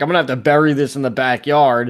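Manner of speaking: ordinary talk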